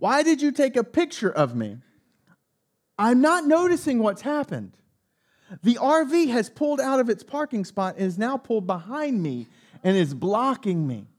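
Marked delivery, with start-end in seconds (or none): 0.0-1.8 put-on woman's scream, pitched higher. Retelling how a woman yelled at the car window: imitating a woman screaming. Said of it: "while she's screaming at me".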